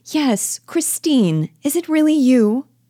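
abrupt burst of recognition. Nora, greeting Mrs. Lind, whom she did not recognize: sudden recognition.

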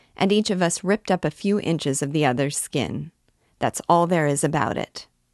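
ordinary delivery, nothing marked

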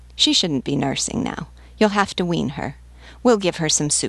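ordinary delivery

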